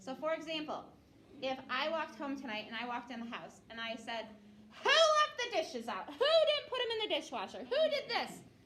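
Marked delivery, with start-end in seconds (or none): 4.8-8.4 full-volume, high yelling with wild, swooping pitch swings. Imagining walking into the house tonight and yelling. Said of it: "because I was yelling".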